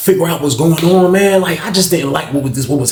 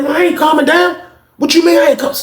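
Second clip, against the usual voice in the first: mock-angry outburst, put-on anger; 11 semitones higher than usual. Retelling a confrontation after someone told a man to calm down, mock-angry outburst. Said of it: "Calm down".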